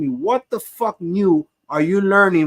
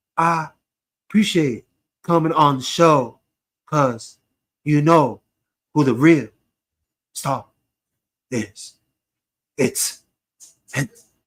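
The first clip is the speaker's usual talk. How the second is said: scornful, derisive put-on way of talking; 2 semitones lower than usual. A speaker mimics how a man talks to a show guest: mocking impression. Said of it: "if I hear that shit".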